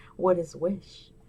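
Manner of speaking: soft, frightened, scared, timid little voice. The speaker acts out a woman's question about a word: mock-scared, timid voice. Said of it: "She asks in a scared, timid voice".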